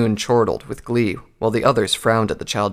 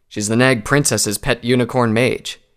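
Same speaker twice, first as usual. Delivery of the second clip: usual speaking voice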